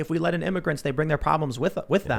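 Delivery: ordinary talk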